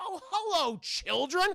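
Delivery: warm tone pitched way up. Retelling a movie scene where a friendly doctor greets kids: Doctor Hibbert voice. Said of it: "like Doctor Hibbert from The Simpsons".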